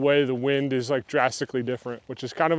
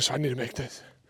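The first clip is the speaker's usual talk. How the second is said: hushed whisper, much quieter; 9 dB quieter than usual. Lining up a golf putt while people are watching, whispering. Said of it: "I'm whispering because there's people watching".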